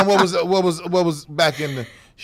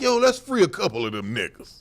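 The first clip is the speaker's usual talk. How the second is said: ordinary talk, nothing marked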